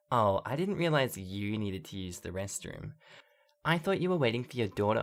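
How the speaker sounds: dripping with snottiness. Retelling what a rude mother said in a restroom: imitating a snotty tone. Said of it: "in the snottiest tone I've ever heard".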